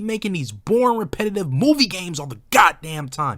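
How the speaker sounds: loud, high-pitched angry outburst boiling over. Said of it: "you sound like you're a little, you know, a little angry".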